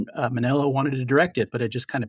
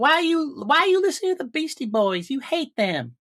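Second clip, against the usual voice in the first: very high, squeaky put-on voice. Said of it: "That's what I sound like".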